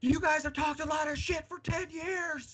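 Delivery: put-on shouting. Retelling what someone shouted at the fence line after a match: imitating someone shouting. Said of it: "kind of, like, shouted at me".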